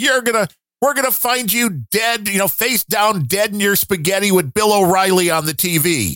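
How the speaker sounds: play-acted, high-pitched, yelling, scolding tone. Recapping a show scene where the ex-wife yells at him: imitating the ex-wife yelling. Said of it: "the ex-wife is yelling at him like".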